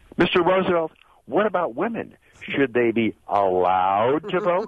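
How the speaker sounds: high-pitched, sneering, jeering voice. Retelling a suffragist standing up to question Roosevelt, mocking Roosevelt's voice. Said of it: "Mocking his voice".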